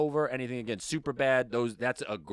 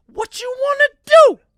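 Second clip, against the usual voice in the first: shrill, very loud shout at highest pitch; 18 dB louder than usual. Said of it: "this dude's gonna make me use my high voice".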